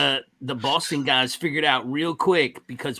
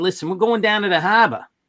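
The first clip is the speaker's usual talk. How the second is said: put-on Boston accent; 5 semitones higher, 6 dB louder than usual. Recalling phone company work, quoting the Boston guys, in a Boston accent. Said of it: "get to talking to those Boston guys. They'd be like".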